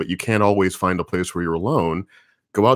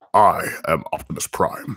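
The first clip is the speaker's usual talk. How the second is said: deep put-on robot hero voice. Joking about how deep the voice sounds: deep Optimus Prime voice. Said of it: "my voice is very deep".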